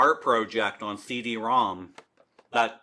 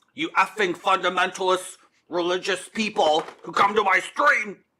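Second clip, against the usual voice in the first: high, raised, outright shouting outburst; 7 semitones higher than usual. A streamer yells at fundamentalist religious people who come to the stream: yelling. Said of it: "Sorry for yelling".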